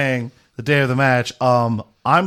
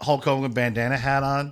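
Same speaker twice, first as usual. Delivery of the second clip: usual speaking voice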